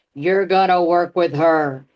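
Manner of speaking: imitated booming voice. Telling about a first business life coach session, the speaker imitates a booming voice. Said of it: "I hear a booming voice that says".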